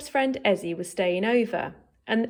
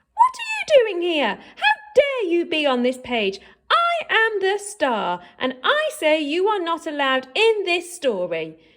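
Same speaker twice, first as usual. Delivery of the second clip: shrill, swooping, bossy screeching; 8 semitones higher, 3 dB louder than usual. Narrator reading a story character's words to Herb, shrieking. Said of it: "shrieked the shrieking thing".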